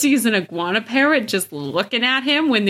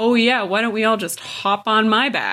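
mock sarcastic cartoonish voice. Retelling a sarcastic line from Sokka: imitating Sokka's sarcasm. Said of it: "when Sokka's like".

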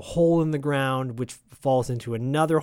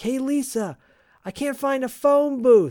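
play-acted, very high-pitched, shouted call; 12 semitones higher, 4 dB louder than usual. Retelling a movie scene where the husband shouts over wind: imitating a shout. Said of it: "he shouts at her".

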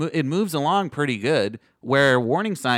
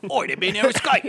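put-on Australian accent, higher pitch; 6 semitones higher than usual. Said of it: "Not to be confused with the Australian version".

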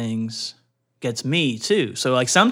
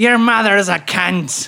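put-on Irish accent, pitched up; 5 semitones higher, 4 dB louder than usual. Trying out accents after joking about irish phrases, irish accent. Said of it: "that was more Irish".

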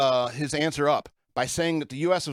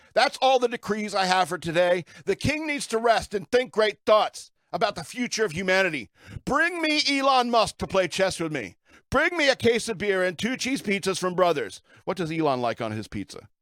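yelling in a mad king voice, higher pitch; 4 semitones higher than usual. Playing a mad king issuing decrees: shouting decrees as a mad king. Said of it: "Shouting all my decrees".

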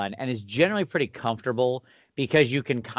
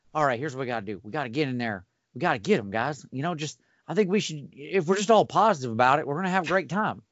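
light, drawling Texas accent; 3 semitones higher than usual. Demonstrating a paladin character's voice from a tabletop game: George W. Bush light Texas drawl. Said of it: "kind of this Texas drawl".

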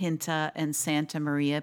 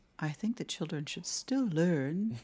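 put-on clenched-teeth upper-class lockjaw accent, quieter; 5 dB quieter than usual. Repeating the other speaker's line as suggested: Thurston Howell Long Island lockjaw. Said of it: "deliver it in a real Thurston Howell Long Island lockjaw".

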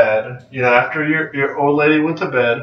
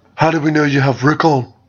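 really bad, clumsy put-on brooding voice, on purpose. Reenacting a scene from the show, doing a Jon Snow impression. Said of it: "I'm going to do my best Jon Snow impression".

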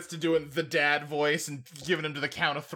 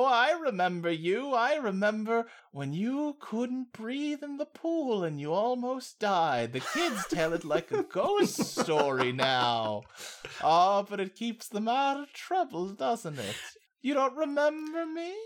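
put-on creepy, swooping, sing-song old woman voice; 7 semitones higher than usual. Retelling a scene, the speaker voices a woman upsetting David, imitating her creepy voice. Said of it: "such a creepy tone to the way she talks".

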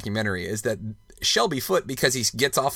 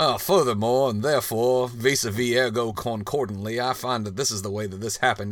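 put-on Southern-accented delivery. Imitating a documentary historian's Southern-accented commentary: Shelby Foote impression. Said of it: "Shelby Foote with his Southern accent".

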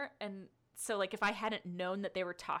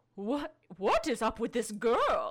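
put-on grandmother voice, louder, higher; 2 semitones higher, 8 dB louder than usual. Recapping a Sailor Moon scene, voicing Luna's thought about Serena in Luna's grandmotherly voice. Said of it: "in her wonderful grandmother's voice is like".

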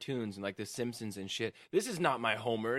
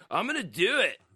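mock drunken slurring, higher and louder; 9 semitones higher, 7 dB louder than usual. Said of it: "he's all drunk at my house".

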